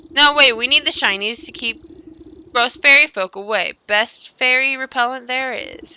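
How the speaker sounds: high, loud, cackle-laced creature voice. Refusing a demand to hand over the mirror shard, in a cackling voice. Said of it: "A familiar ca- cackling voice floats above the others".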